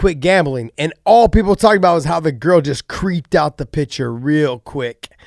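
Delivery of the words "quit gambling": ordinary delivery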